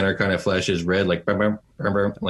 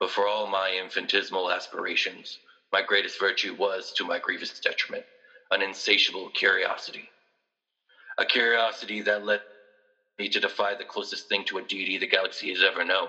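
character voice sounding over intercom, quieter; 6 dB quieter than usual. Voicing Doctor Zahn speaking over the intercom to the players: Doctor Zahn voice. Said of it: "it's Doctor Zahn's voice".

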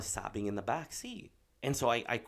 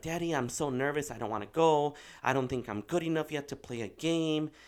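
put-on crying, higher pitch; 3 semitones higher than usual. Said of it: "why she's so nervous and sobbing".

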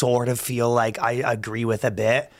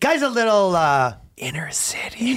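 soft, breathy half-whisper under the breath; 8 semitones higher than usual. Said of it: "you just have to whisper it".

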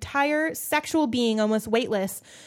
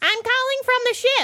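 high-pitched motherly voice, pitched way up; 13 semitones higher, 4 dB louder than usual. Reading a novel aloud, the reader voices the mother on the phone: Enid's mom voice. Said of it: "Great mom voice".

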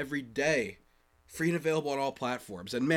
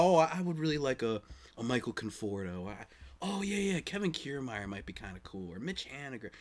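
mock buffoonish, self-mocking voice; 3 semitones lower, 5 dB quieter than usual. Retelling own past wishes on the microphone, mocking own past words like a buffoon. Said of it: "I get on this microphone like a buffoon saying".

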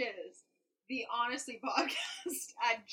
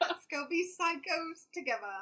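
bad, unconvincing put-on American accent, pitched up; 6 semitones higher than usual. Joking about being manic together, in a bad american accent. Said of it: "Really convincing American accent, [name]".

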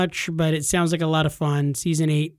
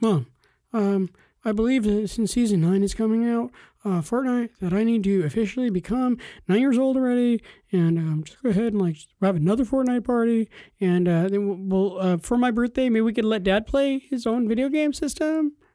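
put-on pitched-up young boy's voice; 5 semitones higher than usual. Playing the son asking Mom for a Fortnite party: imitating his son's voice. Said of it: "that's a pretty good representation of your voice".

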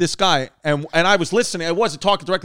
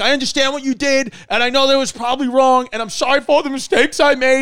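mock yelling; 7 semitones higher, 3 dB louder than usual. Retelling a man's outburst on a boat before he jumped off, retelling a yell. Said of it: "And he starts yelling".

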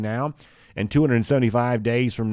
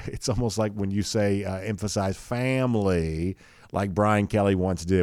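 ordinary delivery

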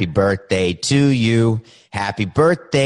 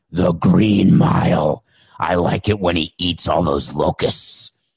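surprisingly deep, low put-on voice; 4 semitones lower than usual. Voicing Wilson the volleyball as a guest: deep Wilson voice. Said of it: "I didn't think Wilson had such a deep voice".

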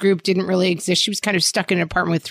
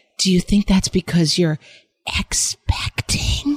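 hushed, scandalized whisper. Retelling a grandmother's shameful-sounding question: imitating a whisper. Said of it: "and in a whisper, like she was saying the most shameful thing".

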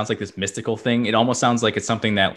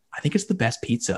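hushed whisper, much quieter; 2 semitones higher, 5 dB quieter than usual. Giving a shout-out, whispering. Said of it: "I'm going to whisper that".

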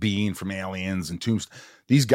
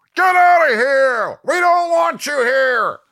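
very loud, very high, shrill, booming heckler yell; 9 dB louder than usual. Retelling an audience member heckling a talk-show guest, imitating a heckler yelling. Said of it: "this guy yells out".

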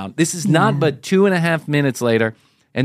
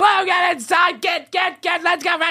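acted-out yell, much higher pitch, much slower. Retelling calling the dog blue inside, reenacting yelling at her outside. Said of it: "So I'm yelling at her outside".

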